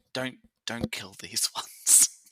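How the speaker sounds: whispered aside. A player's character whispers to another character during the scene; whispering. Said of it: "I'm gonna whisper to Yama".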